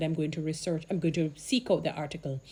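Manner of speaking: normal talking voice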